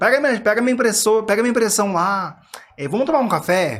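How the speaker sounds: loud high shouting. Retelling how one now talks at the office: imitating own shouting. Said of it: "eu já tô gritando".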